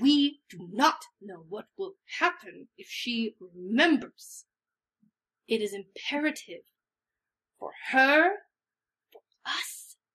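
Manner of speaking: spoken through clenched, gritted teeth. Playing a character in a group role-play scene, speaking through clenched teeth. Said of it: "I say this through, like, clenched teeth".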